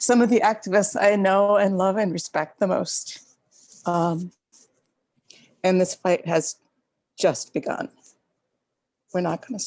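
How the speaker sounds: emotional and weepy, near tears. Sharing thanks with fellow fasters and activists, getting weepy. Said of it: "sorry, I'm getting weepy".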